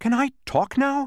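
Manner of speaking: joyful, happy, high-pitched cry. A character who just got his voice back asks to talk, crying out happily. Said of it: "Cried Milo happily".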